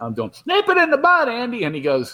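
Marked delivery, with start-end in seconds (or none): 0.4-1.6 very high-pitched, put-on comic character voice. Recalling posing beside Don Knotts and doing his character for him, old Barney Fife impression. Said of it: "I'm doing the old Barney".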